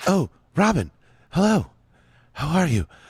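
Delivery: guarded, careful, discreet voice. A character hiding in a ceiling answers a radio call from robin, talking quietly. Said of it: "I have to talk quietly".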